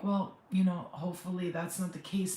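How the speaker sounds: ordinary delivery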